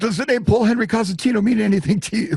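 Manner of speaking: mock flustered blurting. Retelling a phone call, the speaker acts out his past self, retelling a flustered blurt. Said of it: "as I blurted out".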